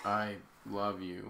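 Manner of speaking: mock, utterly flat monotone delivery. Retelling a scene where he tells her I love you, in a flat monotone voice. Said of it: "it's like the most monotone".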